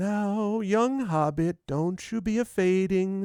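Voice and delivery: confiding tone. Voicing a man bending down to a hobbit, speaking very quietly. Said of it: "very quietly".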